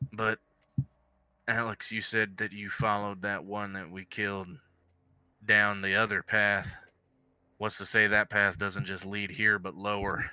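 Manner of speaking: low husky whisper. Voicing a character leaning in to suggest another path: husky whisper. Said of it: "says in a husky whisper".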